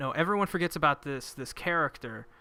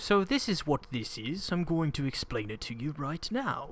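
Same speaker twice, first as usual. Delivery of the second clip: imitated British accent. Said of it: "With a British accent and a lab coat".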